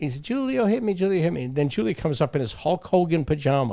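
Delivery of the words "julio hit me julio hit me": put-on tearful, high-pitched crying child whine. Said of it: "He's crying".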